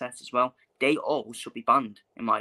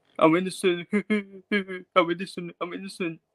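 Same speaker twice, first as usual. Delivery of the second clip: high, tearful, blubbering crying; 6 semitones higher than usual. Mocking claims of innocence from Conor Benn: mock crying Conor Benn impression. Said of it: "Crying and all that".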